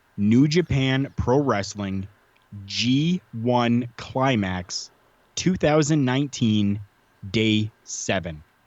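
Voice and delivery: slow, halting, deliberate word-by-word delivery. Giving listeners a match title so they can find it: speaking slowly. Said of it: "I'll say it slow enough here for you".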